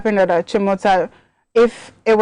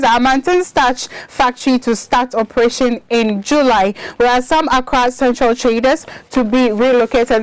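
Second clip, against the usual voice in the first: ordinary talk, nothing marked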